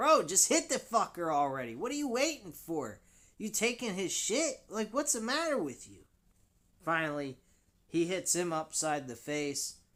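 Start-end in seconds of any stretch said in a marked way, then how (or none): 0.0-6.0 put-on screaming, high-pitched yell. Recalling yelling at a fighter on screen, retelling screaming at the screen. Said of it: "I was screaming at the screen going".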